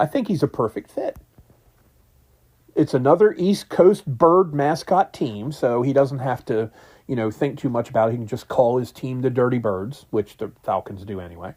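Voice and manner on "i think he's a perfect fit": thick, dripping, heavy sarcastic delivery. Commenting on a coach interviewing with the Falcons: heavy sarcasm. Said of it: "with as much sarcasm as can possibly drip off my tongue".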